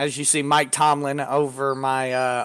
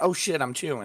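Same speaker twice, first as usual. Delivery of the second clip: mock startled, caught off guard, quieter; 7 dB quieter than usual. Imitating the co-host caught off guard while chewing: imitating someone caught off guard. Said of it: "You look like I caught you off guard".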